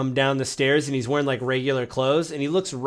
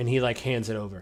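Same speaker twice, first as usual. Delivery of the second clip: usual speaking voice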